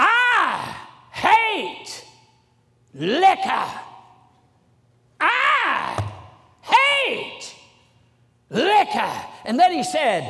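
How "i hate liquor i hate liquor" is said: put-on very slow, swooping Southern accent, drawn-out "I". Retelling what someone said, trying their best at a Southern accent. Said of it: "I'm trying to use my best Southern accent with this".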